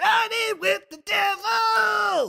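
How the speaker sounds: very high, slow belted shout. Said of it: "Gosh, he just sounds like a dude there".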